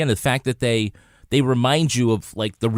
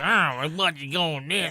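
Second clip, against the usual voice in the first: put-on old man voice, higher, quieter; 4 semitones higher, 6 dB quieter than usual. Doing his impression of the two detectives as old men, in an old-man voice. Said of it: "my impression of the two detectives as old men".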